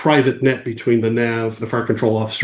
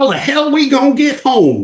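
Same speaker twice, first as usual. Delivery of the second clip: very high, loud, very country, tobacco-dipped voice; 5 dB louder than usual. Retelling a voice that broke a long silence: very country voice with tobacco dip. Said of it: "this very country voice with a, a, a dip of tobacco".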